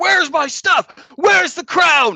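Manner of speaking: very high, shrill, very loud, in-your-face screaming. Voicing a man demanding his stolen crown: screaming in someone's face. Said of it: "the other guy is still screaming in his face".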